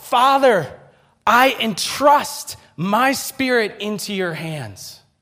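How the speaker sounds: very high, loud, slow crying shout.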